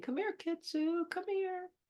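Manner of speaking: calm, soft, high coaxing tone.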